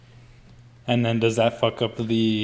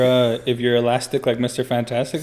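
usual speaking voice

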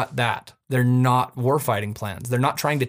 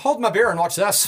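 terrible fake Irish brogue, high pitched; 8 semitones higher than usual. Telling a history story, quoting the irish before a march, in a bad irish accent. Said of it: "terrible accent".

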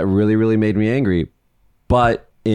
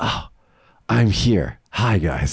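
very slow, stretched-out, cheerful delivery. Imitating Biden on camera, happy to be there: imitating Biden as happy and positive. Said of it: "so positive. He's like".

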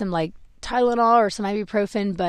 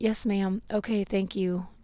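feeble, meek, soft and weak little voice; 9 dB quieter than usual. Retelling a reply at a pharmacy window: imitating a weak reply. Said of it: "I just really weakly said".

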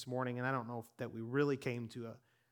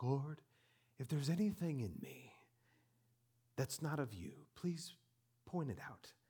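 mock-dramatic man's tone, quieter; 6 dB quieter than usual. Retelling how Rick prayed in his office, imitating Rick's dramatic prayer. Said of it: "he's very dramatic".

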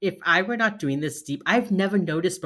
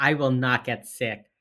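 plain

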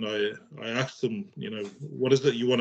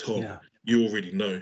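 deep put-on voice; 3 semitones lower than usual. Retelling hearing the father's voice say it: imitating father's deep voice. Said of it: "my father's got a really deep voice".

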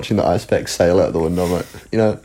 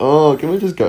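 put-on, exaggerated, high, whining voice; 9 semitones higher than usual. Retelling playing up wanting to go home: imitating her own whiny pleading. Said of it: "really playing up the fact".

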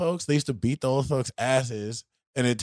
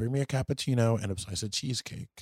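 normal talking voice

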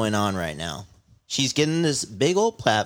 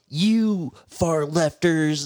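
whining, complaining voice; 4 semitones higher than usual. Retelling how Donald Trump sounds on Twitter while impeached: imitating Donald Trump whining. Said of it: "sounds like a little whiny bitch".

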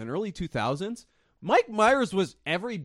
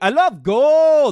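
loud, high, exaggerated Dutch accent, "gold" stretched; 8 semitones higher, 12 dB louder than usual. Talking about Colonel Tom Parker's Dutch accent, the speaker quotes Goldmember in an exaggerated Dutch accent. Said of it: "That's Dutch".

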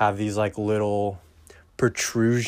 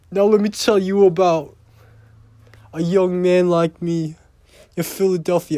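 put-on Boston accent, higher and louder; 8 semitones higher, 5 dB louder than usual. Doing a Boston accent after saying he wants to be Bill Burr: Bill Burr Boston accent impression. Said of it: "he has a Boston accent".

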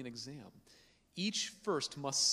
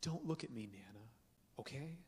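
extremely sweet, sugary mock sweet voice; 3 semitones lower, 10 dB quieter than usual. Retelling a girl's words to her grandma: imitating saying it sweetly. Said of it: "as sweetly as could be".

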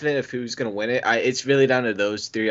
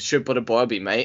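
put-on Australian accent. Joking about a wrestling match, imitating Triple H's Australian accent. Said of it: "Triple H Australian".

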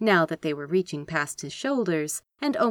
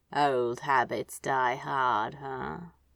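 low, half-awake, sleepy mumble; 5 semitones lower, 3 dB quieter than usual. Narrator reading a character's line from the pillow, mumbled. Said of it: "he mumbled".

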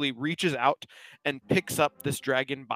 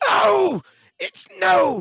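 very high, very loud panicked outcry; 10 dB louder than usual. Voicing a dragon punched in the gut, crying out in panic. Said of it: "and cries out".

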